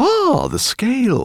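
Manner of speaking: very high, loud exclaiming cry. Narrating a professor's reply to a demand for a scale, crying out. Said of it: "cried the professor".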